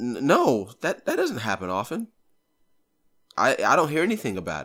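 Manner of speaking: put-on patronizing, swooping, condescending talking-down tone. Retelling a ride, the speaker quotes the Uber driver, mimicking a condescending tone. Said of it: "kind of like in a condescending tone".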